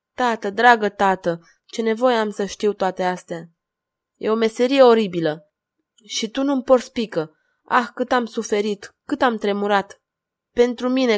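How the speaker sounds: plain reading voice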